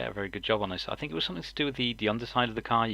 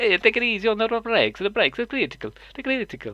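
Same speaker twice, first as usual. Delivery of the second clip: put-on Italian accent; 13 semitones higher, 9 dB louder than usual. Quoting what the race driver was told about the brakes, in a stereotypical italian accent. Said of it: "the most stereotypical Italian uh, voice".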